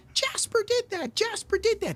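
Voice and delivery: very high-pitched screaming. Retelling a moment from a stream: imitating Phil screaming. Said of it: "Phil just starts screaming".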